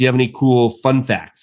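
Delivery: ordinary talk, nothing marked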